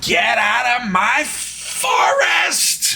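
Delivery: annoying, loud, shrill, very high voice, dragged out. Game narrator voicing a creature that speaks: loud shrill voice. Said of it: "in a loud and shrill voice".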